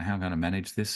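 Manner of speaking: usual speaking voice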